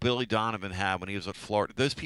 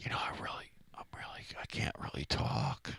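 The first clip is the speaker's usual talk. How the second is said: stumbling, halting, hushed whisper, barely there; 6 semitones lower, 9 dB quieter than usual. Imitating how Ewad whispered on the show that night: imitating Ewad whispering. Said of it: "We had Whispering Ewad that night".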